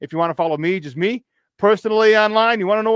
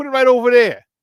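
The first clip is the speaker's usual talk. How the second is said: put-on Chicago accent, pitched a bit high; 5 semitones higher, 4 dB louder than usual. Giving a listener instructions, the speaker slips into: Chicago accent. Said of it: "my Chicago accent".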